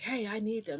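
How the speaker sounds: high-pitched, loud shout carrying across distance. Telling about Goku asking kids for his Dragon Balls: imitating Goku yelling. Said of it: "He's like yelling".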